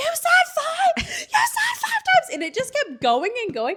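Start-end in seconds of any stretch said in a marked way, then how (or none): 0.0-2.3 put-on panicked, frantic screaming, higher and louder. Retelling a scary ride that kept dropping: retelling own panicked screaming. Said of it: "I'm just screaming like a lunatic".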